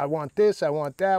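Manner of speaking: ordinary talk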